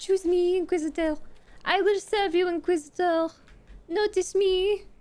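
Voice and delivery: fake French accent throughout. Addressing the Inquisitor: French accent. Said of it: "Why are you talking in a French accent?".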